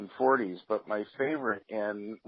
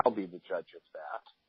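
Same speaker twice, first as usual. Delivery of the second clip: dry, flat deadpan, without a pause; 3 semitones lower, 5 dB quieter than usual. Retelling a newspaperman's reply in a press box: imitating a deadpan reply. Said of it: "just deadpan without missing a beat".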